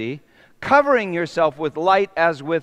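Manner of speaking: ordinary delivery, nothing marked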